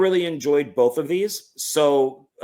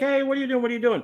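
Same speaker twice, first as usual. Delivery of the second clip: high-pitched, startled protesting tone. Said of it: "Martin Lawrence are like".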